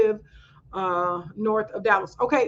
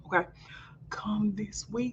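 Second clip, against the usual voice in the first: whispering, much quieter, slower; 12 dB quieter than usual. Host on a live Q and A, keeping news from the kids: whispering. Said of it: "let me whisper because my kids".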